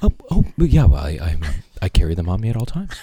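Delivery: very deep, low, faltering, stumbling voice. Retelling his reply when asked, doing a good impression of him. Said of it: "That was a good impression".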